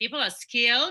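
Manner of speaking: skilled lifted with a rising question-like tone. Imitating the listener's questioning intonation, rising question tone on skilled. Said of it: "you're using a lot of intonations, which are like questioning".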